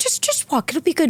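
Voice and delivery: bad, high, poorly done put-on British accent. Retelling what a director said on set, in a bad British accent. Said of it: "I didn't do his accent well".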